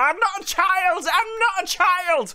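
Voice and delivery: shrill, very high-pitched screaming. Recounting a scene where a woman chases after another, retelling a scream.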